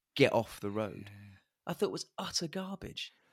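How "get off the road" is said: normal talking voice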